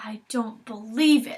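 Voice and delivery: slow, drawn-out hissing delivery. As a man stuffs their letter into the mail slot, Calder hisses. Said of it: "hissed Calder".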